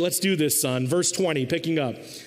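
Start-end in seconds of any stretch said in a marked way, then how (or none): none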